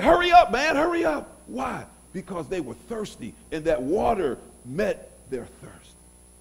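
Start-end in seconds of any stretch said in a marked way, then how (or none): 0.0-1.4 high, loud, impatient urging. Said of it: "And they're like".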